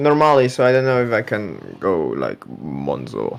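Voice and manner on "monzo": very deep, soft, hushed put-on bass voice. Told to say it in a very deep voice, a usually high-voiced speaker uses very deep voice. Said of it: "You got to say it with a very deep voice".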